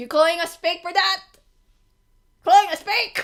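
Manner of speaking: furious, indignant ranting rage voice. Asking another speaker if they are calling the group fake: rage voice. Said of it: "your rage voice sounds hilarious".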